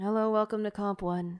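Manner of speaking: big, heavy sighed-out delivery. Voicing a professor who greets the class, sighing heavily. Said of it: "heaves a big sigh. He's like".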